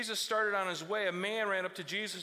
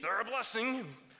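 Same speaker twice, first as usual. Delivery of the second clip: grudging, forced through clenched teeth; 2 semitones higher than usual. Speaker showing how parents sometimes say it, through gritted teeth. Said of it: "I have to say it with gritted teeth".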